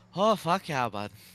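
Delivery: Ottawa Valley accent. Showing what an Ottawa Valley accent sounds like: Ottawa Valley accent. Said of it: "Ottawa Valley is an".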